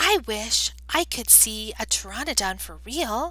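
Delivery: ordinary delivery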